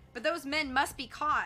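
ordinary delivery

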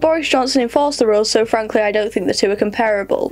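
ordinary talk, nothing marked

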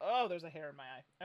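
normal talking voice

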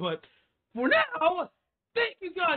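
voice cracks, breaking high mid-line. Signing off a video to viewers, voice cracking. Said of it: "Why did my voice just crack right there?".

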